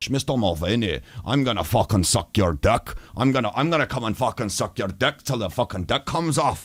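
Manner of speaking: high put-on Scottish accent that keeps sliding Irish. Streamer repeating someone's crude impression of a chat member, Scottish accent slipping into Irish. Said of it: "And he's going Irish".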